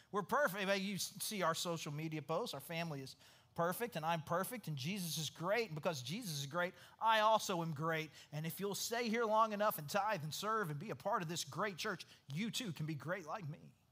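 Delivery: ordinary delivery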